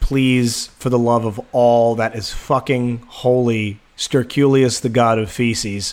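ordinary delivery

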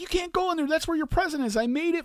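put-on panicky, frantic, very high-pitched voice. Retelling her reaction when he found the sign, imitating someone freaking out. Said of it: "freaking out".

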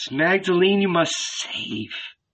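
commanding hissing snake voice. A snake answers the man's question: hissing, imperative snake. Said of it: "the snake hissed imperatively".

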